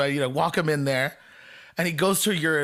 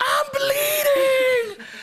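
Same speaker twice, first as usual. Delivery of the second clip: put-on, loud, very high, wailing banshee shriek; 5 dB louder than usual. Act out him looking at his hand in a cab, imitating Donnie Gomez screaming like a banshee. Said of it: "just starts screaming like a banshee".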